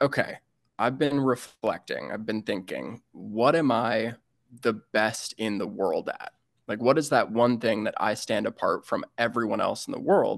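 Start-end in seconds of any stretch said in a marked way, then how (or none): none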